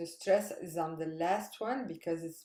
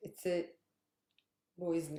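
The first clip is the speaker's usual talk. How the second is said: ordinary delivery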